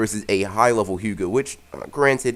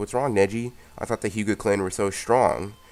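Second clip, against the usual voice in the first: normal talking voice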